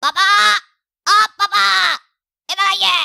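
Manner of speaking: very slow, rough, loud, drawn-out shout. Calling dad over at night from another room: shouting loudly for dad. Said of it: "यहीं से जोर से चिल्लाते".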